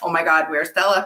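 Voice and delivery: ordinary talk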